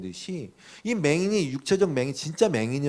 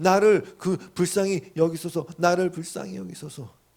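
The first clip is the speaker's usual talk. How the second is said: put-on loud, shouted pleading cry, higher pitch; 4 semitones higher than usual. Acting out a blind beggar crying to Jesus: imitating a loud cry for mercy. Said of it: "더 크게 소리 지르는 거예요".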